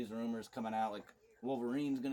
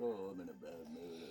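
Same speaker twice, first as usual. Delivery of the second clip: very low, sad, mopey mumbling; 7 semitones lower, 6 dB quieter than usual. Speaker teases Johnny for mumbling as if sad, imitating Johnny's sad mumbling. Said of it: "mumbling or something, like he's sad".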